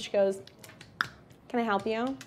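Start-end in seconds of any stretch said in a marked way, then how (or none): 1.5-2.2 bored gum-chewing receptionist voice, quieter. Voicing a bored front-desk secretary greeting the players: bored secretary chewing gum. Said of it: "She's, like, chewing gum".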